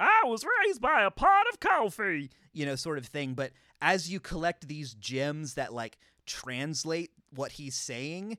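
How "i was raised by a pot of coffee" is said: very high, very loud, shrill, swooping sing-song. Describing a game's character by imitating his lines: Homsar voice. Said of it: "sitting there just doing his".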